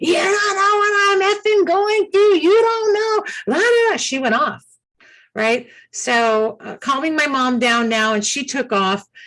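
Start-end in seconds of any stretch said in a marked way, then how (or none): 0.0-4.0 mock, shrill, very high-pitched screamed rant. Retelling how a stranger turned and shouted at the speaker: imitating a woman screaming. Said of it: "she was screaming".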